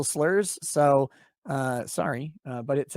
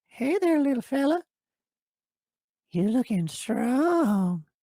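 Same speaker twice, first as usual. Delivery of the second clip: put-on creepy old man voice, pitched up, strongly drawn out; 9 semitones higher than usual. Reading out a viewer comment, the speaker does the old geezer from Family Guy voice. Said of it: "Kind of feels like old geezer from Family Guy".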